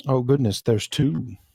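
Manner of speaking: jeering, mocking, sarcastic fretting. Speaking in character after hearing a dragon tale again: mocking. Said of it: "I say that mockingly".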